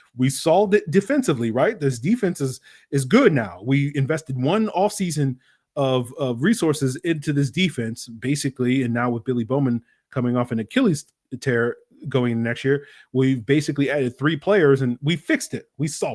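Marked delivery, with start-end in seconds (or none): none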